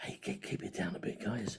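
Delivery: soft, hushed, very quiet, breathy whisper. Retelling what the child noise monitors say to classmates: imitating a whisper. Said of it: "these two go round and whisper".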